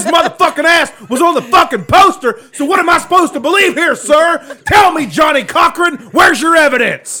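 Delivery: shouting. Arguing with another speaker who disagrees, yelling. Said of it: "I'm in a really yelly mood today".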